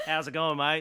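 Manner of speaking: put-on Australian accent. Imagining doing the whole podcast intro in an Australian accent. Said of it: "in my Australian accent and be like".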